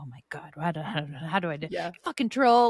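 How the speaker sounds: frustrated grumbling. Retelling playing the game in the basement: imitating own grumbling.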